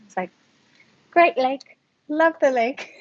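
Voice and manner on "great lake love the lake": put-on English accent, pitched a bit high. Retelling pretending to be from Surrey: retelling her put-on English accent. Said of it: "my English accent story".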